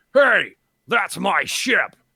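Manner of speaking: vocoded helmet-filtered voice. Narrating a scene, a helmeted stranger calls out about his ship, vocoded voice. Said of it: "kind of like a vocoded voice".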